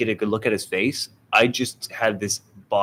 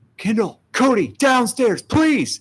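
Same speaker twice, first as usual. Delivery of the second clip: very high, terrified, urgent, acted-out scream; 14 semitones higher, 4 dB louder than usual. Retelling calling others downstairs after locking the back door: imitating own scream. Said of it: "and I scream".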